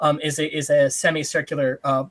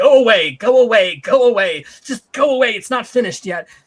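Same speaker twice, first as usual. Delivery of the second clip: put-on loud, high old man shout; 7 semitones higher, 7 dB louder than usual. An old man shouts into a small brass pine cone: old man shouting.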